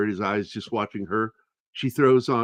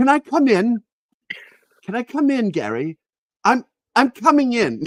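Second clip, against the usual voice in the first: put-on English accent, louder; 12 semitones higher, 5 dB louder than usual. Retelling a woman knocking at the door, in an English accent. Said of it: "she was English".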